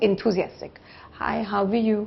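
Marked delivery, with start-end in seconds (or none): 1.1-2.1 dull, flat, unenthusiastic, level delivery. Explaining how tone carries on the phone, demonstrating a dull greeting. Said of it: "So that sounds dull".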